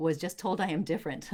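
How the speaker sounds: ordinary talk, nothing marked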